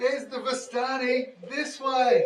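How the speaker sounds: very loud, very high, drawn-out yell. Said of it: "I yell out to the guards".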